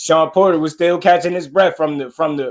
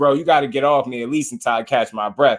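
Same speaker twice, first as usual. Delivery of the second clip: ordinary talk, nothing marked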